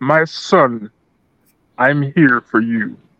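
very slow, croaky, raspy, drawn-out movie-king voice. Doing a deep movie voice in the dark: James Earl Jones impression. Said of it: "I have to do my James Earl Jones".

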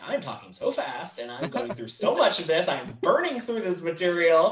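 rushed panicky voice.

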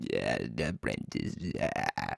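very low, slow, creaky, grating, rough drawl. Explaining why a villain is the scariest: Palpatine impression. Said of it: "Decent impression".

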